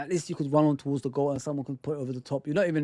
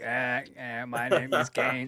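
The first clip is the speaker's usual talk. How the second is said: very slow robotic voice-box voice, words drawn out; 3 semitones lower than usual. Comparing a voice to the wrestler Kane, the speaker does a Kane voice-box impression. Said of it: "and he put that thing on his neck".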